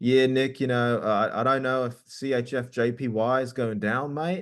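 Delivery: put-on slow-paced speech with Australian accent. Quoting Josh talking to Nick, in Josh's Australian accent. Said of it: "he has an Australian accent. So he's like".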